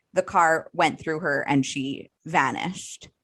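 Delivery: ordinary delivery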